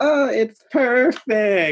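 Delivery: put-on very loud, high, innocent child voice. Retelling how Matt looked in the mirror at his paint: Matt's innocent kid way. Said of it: "in the most innocent kid way".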